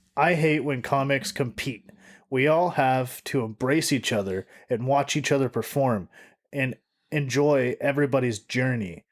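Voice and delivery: ordinary talk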